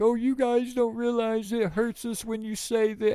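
put-on whiny, weepy, high-pitched crying whine. Retelling a show's intro, the speaker mimics one host, imitating someone crying. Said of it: "one of them was on there crying, like".

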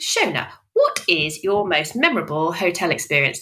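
broadcast announcer tone. Putting the closing question to a guest: Radio 4 voice. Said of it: "There's that Radio 4 voice again".

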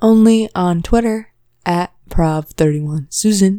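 robotic voice assistant tone. Giving a Twitter handle to another speaker: sounding like Siri. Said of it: "Why'd you sound like Siri".

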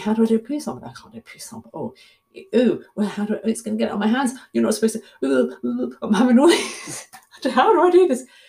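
high-pitched, rushed, fretting delivery.

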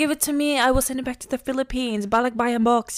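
soft, high, hushed motherly half-whisper. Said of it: "she's whispering".

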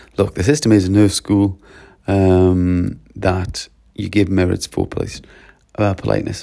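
plain

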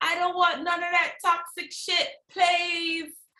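very high-pitched put-on British accent. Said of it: "was that your British impersonation".

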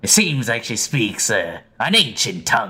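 put-on pirate captain voice. Describing a woman to the group as she starts talking, in a Captain Barbossa voice. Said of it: "You've got the good Captain Barbarossa voice".

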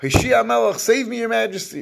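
screamed pleading outcry, very high. Retelling how a woman begged the king: acting out a screamed plea. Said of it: "she screams out".

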